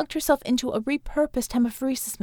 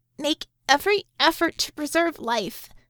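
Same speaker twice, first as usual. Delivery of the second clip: anxious, through gritted teeth, pitched higher; 4 semitones higher than usual. Narrator reading a character's reply to the physician, anxious, through gritted teeth. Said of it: "through gritted teeth and anxiety so high it made her voice go up half an octave".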